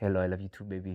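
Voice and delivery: very low, very quiet, hushed put-on Nigerian accent. Quoting a man on the phone who did not sound british: nigerian scammer accent. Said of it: "more like maybe a scammer from Nigeria".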